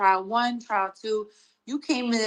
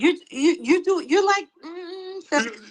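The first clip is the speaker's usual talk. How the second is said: halting, tripping stutter, slightly pitched up; 8 semitones higher than usual. Mocking how she answered when he asked her a question, mock stuttering. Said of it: "Why she stuttering like that".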